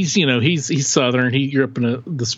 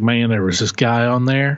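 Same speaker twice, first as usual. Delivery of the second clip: loose, somewhat put-on Southern accent; 2 semitones lower than usual. Retelling what the brother-in-law's brother said: imitating a Southern accent. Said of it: "I'm doing sort of a Southern accent".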